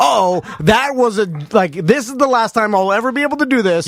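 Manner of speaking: ordinary talk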